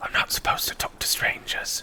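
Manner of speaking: very hushed whisper out of mouth's corner. Narrating a story, a young human boy answers, whispering out of the corner of his mouth. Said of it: "he kind of whispers out of the corner of his mouth".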